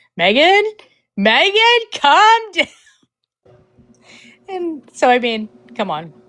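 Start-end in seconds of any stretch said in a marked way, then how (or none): 0.2-2.7 very high-pitched yelling through laughter. Retelling messing around with Megan while laughing, retelling a laughing yell. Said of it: "when I was yelling at Megan".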